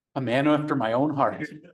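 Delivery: ordinary delivery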